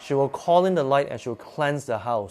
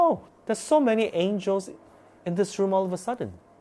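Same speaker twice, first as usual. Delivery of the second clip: high, very cheery and happy voice. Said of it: "because she's very cheery and, like, ah, you know, like, very happy".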